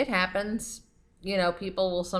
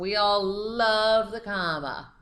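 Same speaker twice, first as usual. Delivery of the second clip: heavy sarcasm, dragged very slowly, love drawn out; 2 semitones higher, 3 dB louder than usual. Introducing commas in a grammar lesson: sarcastic. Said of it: "I'm being very sarcastic on that one".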